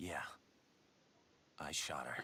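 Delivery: smug, self-satisfied tone. Admitting to the shooting when questioned directly: smug. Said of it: "you could say it a little less smugly than that".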